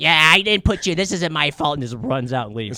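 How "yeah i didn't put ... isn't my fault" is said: smoky trailer-park voice, yelling and screaming. Retelling what a film character's mother said: imitating a trailer park-ish, smoky voice. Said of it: "I could tell the trailer park-ish, smoky voice".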